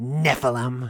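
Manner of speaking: sneering, disdainful, disgusted delivery in an odd voice.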